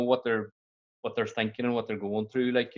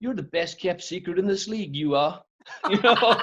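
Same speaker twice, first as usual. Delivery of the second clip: attempted put-on English accent, pitched up; 7 semitones higher, 4 dB louder than usual. Retelling what a man told the speaker, trying an English accent. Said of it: "I'm trying to do an English accent".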